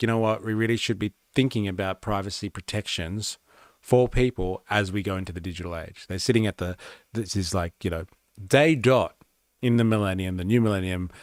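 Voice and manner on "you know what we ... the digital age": ordinary talk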